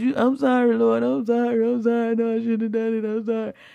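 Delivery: blubbering, snotty, tearful sobbing. Imitating a repentance to the Lord, imitating snot crying. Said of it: "that you snot crying".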